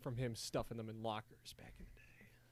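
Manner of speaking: soft whisper, under the breath.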